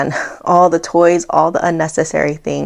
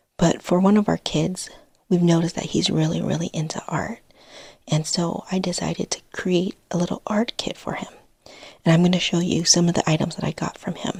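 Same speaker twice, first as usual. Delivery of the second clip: speaking in a whisper; 8 dB quieter than usual. Showing viewers an art kit made for one of the kids, whispering. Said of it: "I'm literally whispering".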